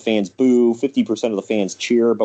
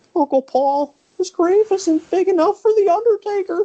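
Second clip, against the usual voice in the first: put-on childish little kid voice, pitched very high. Recalling the build-up to Buried Alive, the speaker quotes him in a little kid voice. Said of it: "sounds like a little kid".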